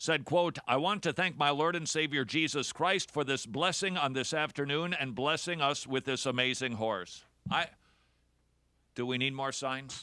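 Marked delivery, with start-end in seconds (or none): none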